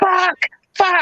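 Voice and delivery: put-on very high-pitched shriek. Retelling the hotel fire alarm going off, acting out Jenny's scream. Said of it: "Jenny fucking screams".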